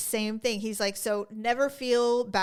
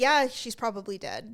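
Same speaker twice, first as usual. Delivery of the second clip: mock casual, offhand tone. Retelling a dad saying a customer is probably dead: imitating a casual tone. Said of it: "say it so casually".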